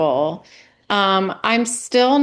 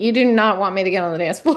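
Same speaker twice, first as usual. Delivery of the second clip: put-on panicked, pleading voice; 2 semitones lower than usual. Retelling own reply to a friend urging a dance: imitating own past panic. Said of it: "I was, like, panicking".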